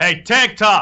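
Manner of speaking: very high-pitched, very loud, shrill shout. A game narrator voices someone calling from a nearby alleyway, shouting. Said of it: "hear Sinner shout".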